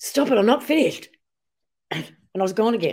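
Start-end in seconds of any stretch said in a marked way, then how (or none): 0.0-1.1 mock, raised, high-pitched sharp snap. Retelling being woken while talking in sleep and snapping at him; retelling a snap. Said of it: "I just snapped at him and went".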